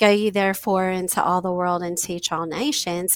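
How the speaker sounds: usual speaking voice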